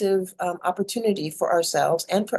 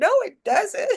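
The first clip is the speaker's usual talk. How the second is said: mock very high, tearful, crying little-kid wail; 14 semitones higher than usual. Retelling a childhood spanking, answering back the parent, imitating own childhood crying. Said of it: "And I'm crying and going".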